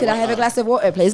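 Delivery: put-on Cockney London-style accent. Joking about returning from london with an accent: put-on cockney accent. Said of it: "like a Cockney accent".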